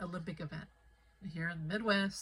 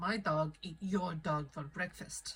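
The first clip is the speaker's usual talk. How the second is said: English with a put-on Russian accent. Retelling what a big guy with a Rottweiler said to him: Russian accent. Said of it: "in a Russian accent".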